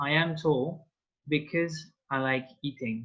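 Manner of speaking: normal talking voice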